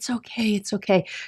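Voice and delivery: gentle, soft, soothing, calming murmur. Showing how one soothes a crying infant: soft soothing voice. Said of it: "Using a soft voice".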